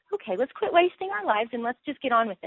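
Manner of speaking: high, urgent, rallying preacher-style voice. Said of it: "there's a little bit of an urgency to go".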